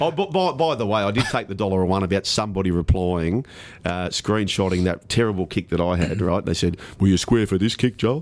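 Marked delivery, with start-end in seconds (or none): 7.0-8.2 funny, silly, mocking put-on voice, faster. A speaker quotes someone's reply about his own kick, in a funny mocking voice. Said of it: "You don't have to do that funny voice".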